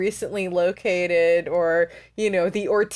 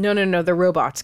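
normal talking voice

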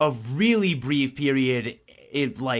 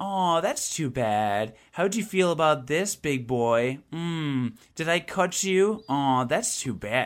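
put-on smug, catty, condescending tone. Complaining about a game character's lines, mock-smug condescending taunt. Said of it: "smug, bitchy, shitty way of talking".

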